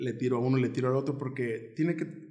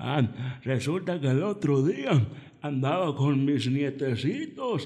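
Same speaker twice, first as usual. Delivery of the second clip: put-on slow, unhurried elderly granny voice; 2 semitones higher, 4 dB louder than usual. Showing how they voice a grandmother, the speaker uses a slow old-person voice. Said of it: "modulando la voz para que parezca un anciano. Lento".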